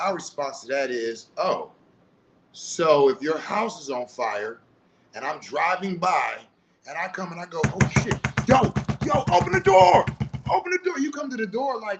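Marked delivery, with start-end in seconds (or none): 7.7-11.0 loud, very high-pitched yelling. Imagining driving past someone's burning house, the speaker acts out yelling at their door. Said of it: "you're yelling and banging on my door".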